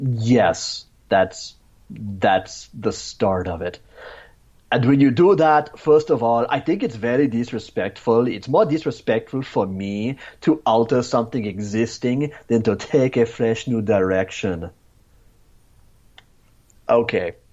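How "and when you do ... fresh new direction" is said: put-on ridiculous European accent, rattled off fast. You mock a man's quote before insulting him: Tommy Wiseau-sounding mock European accent. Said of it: "an offensive mock-up of his ridiculous European accent".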